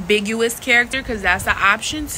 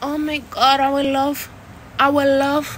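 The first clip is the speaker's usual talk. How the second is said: put-on Spanish accent with broken English; 4 semitones higher than usual. Speaker demonstrating how they mimic a Spanish person, in a broken Spanish accent. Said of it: "I know how to mimic a Spanish person with a broken accent".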